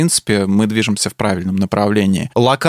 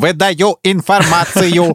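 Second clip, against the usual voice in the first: sharp, harsh mechanical robot voice, pitched up; 7 semitones higher than usual. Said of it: "ну вот как ты изобразил прям".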